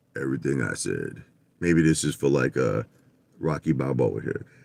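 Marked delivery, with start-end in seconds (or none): 0.1-1.2 creaky, low, hushed put-on radio announcer voice. A livestreamer addresses viewers, putting on a radio announcer voice. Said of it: "I'll do my radio voice".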